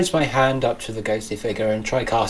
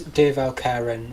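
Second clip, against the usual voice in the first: normal talking voice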